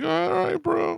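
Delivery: very high-pitched voice. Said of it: "He had a really high-pitched voice".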